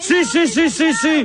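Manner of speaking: furious, angry outburst.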